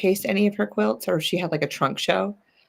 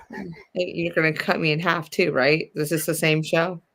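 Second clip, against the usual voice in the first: ordinary talk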